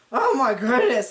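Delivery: mock voice breaking, woozy, a little tipsy. Retelling Janelle's reaction right after doing the shots, imitating her cracking, woozy voice. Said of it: "like her voice cracks and she's kind of a little woozy".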